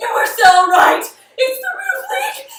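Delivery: very high, very loud scream of panic and terror.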